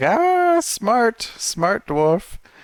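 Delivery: shrill, very high, slow, drawn-out creature cackle. Narrating a game, the speaker voices the Nothic climbing down toward Rangsworthy: cackling Nothic voice. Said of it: "it cackles and it's like".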